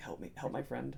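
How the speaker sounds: put-on begging and pleading. Retelling kneeling before two strangers to get help for a friend, acting out begging and pleading. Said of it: "like begging and pleading".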